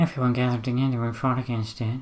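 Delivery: soft, flat, dead, emotionless mumble. Speaker tells a story trying to make it scary, in a dead, emotionless mumble. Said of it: "sort of like a dead, emotionless mumble".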